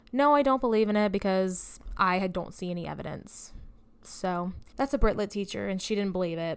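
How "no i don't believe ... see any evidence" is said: plain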